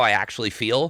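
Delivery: normal talking voice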